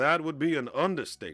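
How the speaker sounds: put-on smooth smuggler voice. Reading a comic line aloud, giving the speaker a Lando voice. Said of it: "I'm gonna give it a Lando voice".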